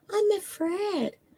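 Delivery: quiet, little, very soft-spoken, smooth hushed voice. Retelling what she said to a woman, in a quiet little smooth voice. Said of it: "she got that kind of smooth voice, that kind of quiet, you know, little voice".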